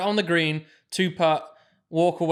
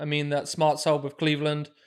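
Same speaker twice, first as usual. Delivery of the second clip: ordinary delivery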